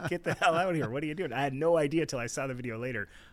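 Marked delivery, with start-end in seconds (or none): 0.1-1.3 high, rushed, rattled-off yell. Recounting yelling at him from outside the tent, retelling a yell. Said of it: "I'm like yelling at him from outside the tent".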